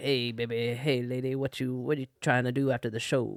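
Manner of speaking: put-on low, elderly old man voice.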